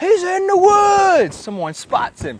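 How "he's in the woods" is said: very high, slow, loud yell. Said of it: "somebody yells".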